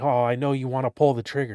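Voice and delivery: whispering talking-gun character voice. Telling someone about a talking gun, voicing the gun whispering in their ear. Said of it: "It whispers things in your ear".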